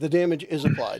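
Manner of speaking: ordinary talk, nothing marked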